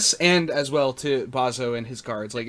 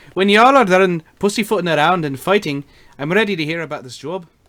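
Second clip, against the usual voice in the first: attempted Irish accent, put-on; 5 semitones higher, 6 dB louder than usual. Retelling what they said in a job interview, in a put-on Irish accent. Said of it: "Irish accents are hard".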